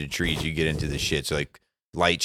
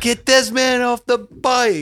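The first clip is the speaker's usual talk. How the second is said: very high, very loud, drawn-out shout; 9 dB louder than usual. Retelling a bike ride, re-enacting their own yell. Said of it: "So I'm yelling like".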